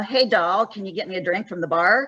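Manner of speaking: plain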